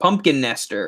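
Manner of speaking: ordinary delivery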